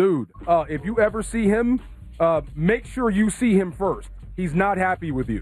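ordinary talk, nothing marked

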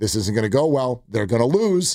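ordinary talk

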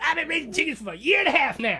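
exaggerated, swooping, very high woman's voice. On a radio show, a host reenacts her answer, exaggerated imitation of a woman. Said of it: "That's exactly how she sounds".

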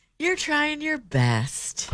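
patronizing, condescending, very high voice. In a challenge to say phrases in the most condescending way; condescending. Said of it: "try to say it in our most condescending way".

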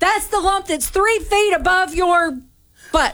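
shouting. Scolding a player whose throw home lost the lead, yelling at a player. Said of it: "you were yelling at me".

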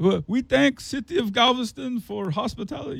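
very high-pitched put-on Dutch accent. Retelling a Dutch guy's thanks to the city: Mike Myers Goldmember Dutch accent. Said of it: "I'll just do Mike Myers from Austin Powers".

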